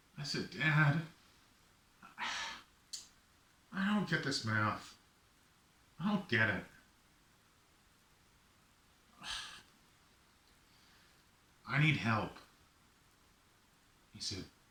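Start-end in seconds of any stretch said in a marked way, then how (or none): 0.5-12.3 put-on tearful, defeated, pleading tone. Retelling telling his father he needs help: imitating his own past tearful plea. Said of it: "I even had tears in my eyes".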